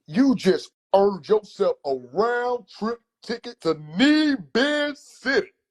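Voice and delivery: put-on grandly dramatic older-man delivery. Imitating his older uncle addressing him after he did something, theatrical older uncle voice. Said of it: "he gotta be theatrical and shit".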